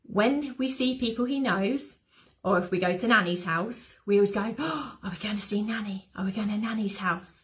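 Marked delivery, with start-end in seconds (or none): 4.6-7.5 hushed whisper. Speaker whispering in case he wakes up in the other room, whispering. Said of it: "Notice I'm whispering".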